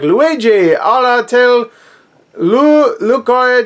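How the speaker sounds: put-on Spanish announcer voice. Reading aloud a title partly in french, in a generic spanish broadcaster voice. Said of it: "doing like a generic Spanish like broadcaster voice".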